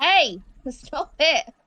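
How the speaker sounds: very loud, high shout. Telling someone to stop clicking through the character sheet, shouting. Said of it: "in case anyone wonders why I'm shouting it".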